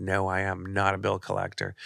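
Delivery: ordinary delivery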